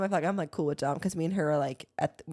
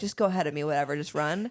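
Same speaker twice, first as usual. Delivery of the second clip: ordinary delivery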